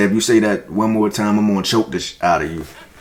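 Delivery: normal talking voice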